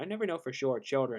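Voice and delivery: ordinary delivery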